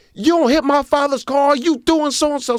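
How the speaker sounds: put-on yelling. Retelling how the daughter yelled at the driver after the accident: imitating someone yelling. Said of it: "she's already yelling at this grown".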